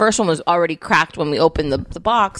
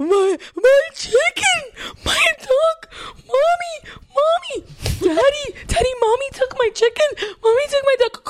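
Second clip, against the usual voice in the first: mock wailing cry, much higher pitch. Acting out wailing over a taken chicken and duck, imitating fake crying. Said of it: "like fake crying".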